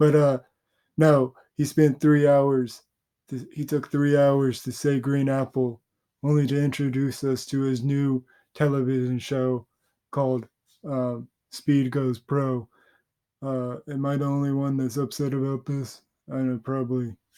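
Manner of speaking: put-on deadpan commentary voice. Imitating a commentator ranting about a long stream ending: Moist Critical impression.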